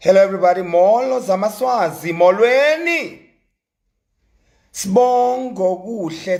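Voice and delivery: mechanical robot voice. The speaker announces they will talk like a robot, then greets everybody; robot voice. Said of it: "I'm gonna speak like this, like a robot".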